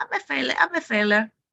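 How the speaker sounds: goofy, silly, high put-on cartoon voice. Showing how a self-critical thought loses power, saying it in a silly voice. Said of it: "when you read it with a silly voice".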